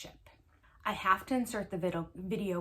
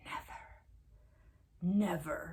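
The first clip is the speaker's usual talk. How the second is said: soft, hushed whisper under the breath; 5 dB quieter than usual. Quoting Kody, who is upset that Janelle gave him no empathy, imitating Kody's whisper. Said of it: "he does his whisper".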